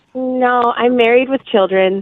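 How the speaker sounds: sad, deflated, without any cheer. A host asks if you're single; answer sounding sad. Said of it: "Don't say it this sad".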